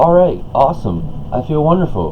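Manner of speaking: lively, high-energy delivery. Contrasting a monotone reply with a lively one: upbeat, energetic delivery. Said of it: "to turn that on right there, it required an excess amount of energy".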